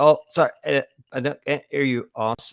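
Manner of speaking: choppy, cutting-out audio like a bad phone signal. Faking a bad connection to avoid taking the boss's call, choppy bad-connection audio. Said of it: "a really good impression of someone with bad audio".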